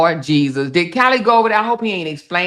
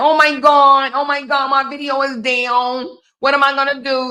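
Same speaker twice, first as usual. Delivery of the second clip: frantic fake panic at a very high pitch; 9 semitones higher than usual. Mocking a hater's idea of the speaker's reaction: mock panicking. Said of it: "Ho thought I was gonna wake up and be like".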